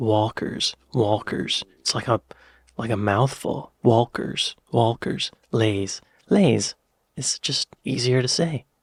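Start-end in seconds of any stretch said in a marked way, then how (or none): 0.0-1.6 put-on American accent, American-accented pronunciation. Comparing how to say the two brand names, now in an american accent. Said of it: "But with an American accent".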